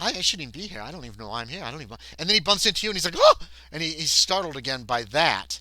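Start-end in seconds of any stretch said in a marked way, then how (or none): 0.0-2.0 soft muttering under the breath. Narrator voicing a man edging toward the door, muttering to himself. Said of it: "you hear him muttering something about".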